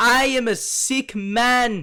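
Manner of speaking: put-on awful German accent. Joking around with another speaker mid-show: awful German accent. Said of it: "That was an awful German accent".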